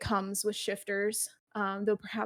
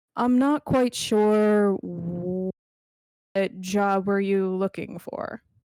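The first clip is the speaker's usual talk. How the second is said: put-on deep voice, laughing, louder; 7 dB louder than usual. Role-playing, Rum sizes up Benny and asks what job he wants, laughing through Rum's deep voice. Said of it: "I can't speak deeply when I'm laughing".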